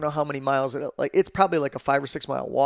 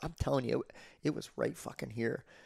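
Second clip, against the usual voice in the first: acted-out whisper, much quieter; 13 dB quieter than usual. Retelling what he told him while they chased bulls: retelling a whisper. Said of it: "I'm whispering to him".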